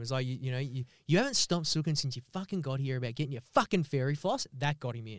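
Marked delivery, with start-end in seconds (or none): 0.2-4.5 acted-out angry scolding tone. Retelling scolding a five-year-old, imitating own angry telling-off. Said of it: "I got to give him a real fucking go".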